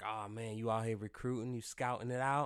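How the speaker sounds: mock eager, keyed-up, excited, playful teasing tone. Retelling what was said on seeing a separated friend: retelling own excited question. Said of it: "you sound a little bit too excited for that".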